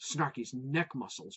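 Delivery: ordinary delivery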